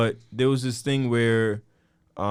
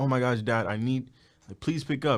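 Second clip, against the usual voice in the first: put-on panicked, urgent pleading child voice; 3 semitones higher than usual. Imitating a kid calling their dad for help: imitating a kid's panicked plea. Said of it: "your kids calling you".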